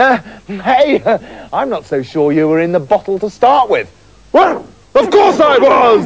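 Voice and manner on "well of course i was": crying out, pitched way up. The spirit answers the boy who doubts it, crying out. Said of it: "the spirit cried".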